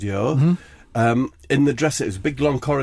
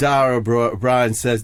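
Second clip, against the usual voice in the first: normal talking voice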